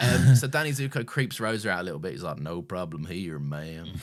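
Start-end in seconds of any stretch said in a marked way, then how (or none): 2.4-3.9 slow, fake southern US accent. Imitating a character who puts on an accent: put-on southern accent. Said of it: "He's got a southern accent".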